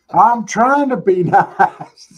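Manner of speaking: high, loud, slow laughing through the words.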